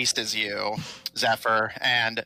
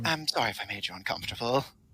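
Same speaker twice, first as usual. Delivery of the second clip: quiet whisper, quieter; 6 dB quieter than usual. Voicing a character who hugs a player and whispers: whispering quietly. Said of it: "whispers to you quietly".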